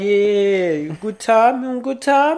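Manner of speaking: fake Czech accent, high, slow, stretched yeah. Imagining running a souvenir shop and greeting a customer, in a put-on accent. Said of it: "Why are you putting an accent".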